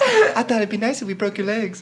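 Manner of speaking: light, calm, cheerful high voice. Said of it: "He's so calm and happy about it".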